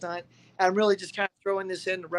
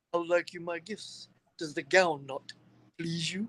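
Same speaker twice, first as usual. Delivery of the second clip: put-on British accent; 2 semitones lower, 4 dB quieter than usual. Speaker quotes the character Darkness, doing Darkness's British accent. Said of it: "Dark Darkness has got a bitch and British accent".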